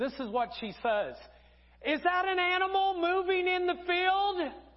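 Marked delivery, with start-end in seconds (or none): 1.9-4.5 acted, blaring, very loud and very high-pitched. Retelling what the speaker's wife said among weeping, quiet people, very loud voice. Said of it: "in a very, very loud voice".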